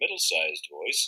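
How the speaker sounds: ordinary delivery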